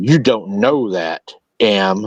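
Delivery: stern, hushed voice. Sam turns to the narrator in the road and speaks in a low, stern whisper. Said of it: "in a stern, low, but very stern voice ... she whispered".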